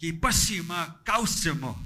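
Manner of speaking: stern, firm, scolding grandmother voice. Imitating a grandmother saying a Cree phrase: imitating a stern grandmother. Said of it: "that's being stern".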